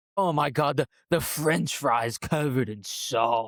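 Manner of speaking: put-on seductive voice. Mocking how the reward is explained: imitating Jeff's sexy voice. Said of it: "the Jeff sexy voice".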